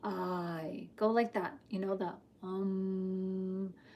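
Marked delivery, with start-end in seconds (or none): 0.0-0.9 deep voice with a stretched-out, drawn-out "I". Showing how to say 'I' with a deep voice: deep voice on 'I'. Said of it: "Say with a deep voice".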